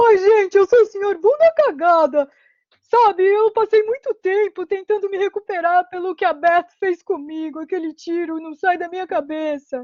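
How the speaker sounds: muffled voice, as through pipe. Showing the voice he found for the character, a tube-like voice. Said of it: "é uma voz mais entubada".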